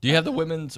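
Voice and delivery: high voice breaking mid-phrase. Asking another speaker a question mid-sentence, voice cracking. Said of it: "oh, my voice cracked there".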